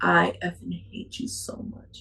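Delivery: mock-calm delivery. Retelling what a man said to the speaker: imitating his calm delivery. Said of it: "Calm, the way he said it".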